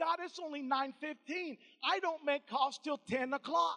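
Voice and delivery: plain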